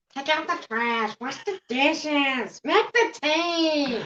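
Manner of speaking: tea stretched out. Doing an impression of a mom when asked. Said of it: "I can do an impression of my mom".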